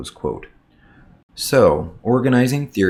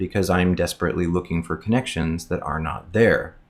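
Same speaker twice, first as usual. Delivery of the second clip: usual speaking voice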